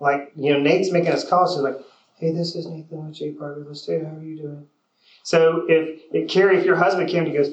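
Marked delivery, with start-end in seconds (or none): 2.2-4.7 soft, low-energy voice. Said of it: "but your energy's low".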